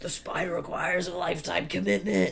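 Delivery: put-on high, rough, ragged, strained cry of pain. Retelling what a man on the ground said, acting out his yell of pain. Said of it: "He's like yelling".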